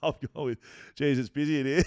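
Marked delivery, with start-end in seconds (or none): 1.0-1.8 put-on cheeky tone, higher and louder. Retelling a cheeky remark to a busy ticket clerk: imitating his own cheeky tone. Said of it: "He has heard me say that in that tone".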